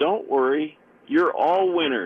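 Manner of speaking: canned-sounding little cheerleader voice. Retelling what a computer baseball game says after a loss, cheerleader voice. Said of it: "a little Morgan-like cheerleader voice comes on and says".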